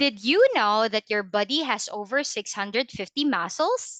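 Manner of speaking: rising, question-like pitch on final word muscles. Showing that the tone goes up when asking: rising pitch at end of question. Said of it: "If there's a question mark, my intonation is going up".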